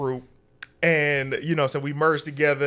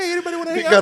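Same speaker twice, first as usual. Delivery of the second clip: mock humble voice, higher and louder; 5 dB louder than usual. Mocking how the other speaker sounds when off the workout plan: imitating a humble voice. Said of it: "This voice now".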